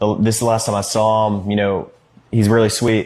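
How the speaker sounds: ordinary talk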